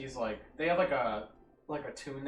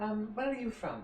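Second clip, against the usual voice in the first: younger female voice, pitched up; 9 semitones higher than usual. Voicing a hooded creature asking where someone is from: younger female voice. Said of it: "a younger female voice".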